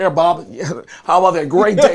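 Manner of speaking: businesslike, very professional office voice. Retelling a childhood visit to father's office, imitating father's professional talk. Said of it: "my father was talking very professional".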